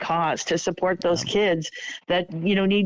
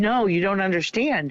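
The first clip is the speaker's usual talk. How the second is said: put-on words spoken through tears, crying. Retelling a phone call where a raffle winner answers: imitating someone crying. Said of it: "she starts crying and she says".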